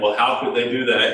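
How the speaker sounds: ordinary delivery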